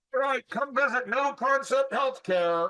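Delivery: high, yelled hawker-style promo voice. Showing how to get your name out by running outside: yelling an advertisement. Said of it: "why are you yelling at me?".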